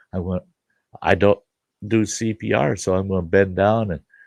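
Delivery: ordinary talk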